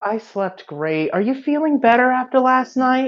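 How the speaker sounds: put-on very high-pitched grandma voice. Voicing grandma Mary greeting Gwen at breakfast: Mary voice. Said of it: "slipping into the Mary voice".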